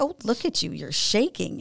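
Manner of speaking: mock scornful, jeering, taunting sneer. Retelling how the mother mocked the speaker for shaking: imitating a mocking mother. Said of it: "she just mocked me".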